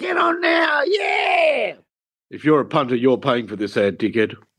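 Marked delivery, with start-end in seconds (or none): 2.3-4.3 mock-serious tone, much lower pitch. Parodying the end of a betting ad, in a mock really serious voice. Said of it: "Like in a really serious voice".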